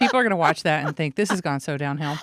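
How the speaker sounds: ordinary delivery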